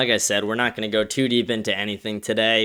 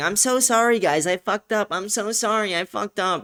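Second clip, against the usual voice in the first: very high-pitched, grovelling, spineless meek tone; 11 semitones higher than usual. Imitating the guy from the Heritage Foundation apologizing: mocking a cowardly apology. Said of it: "acting like a spineless coward and now saying".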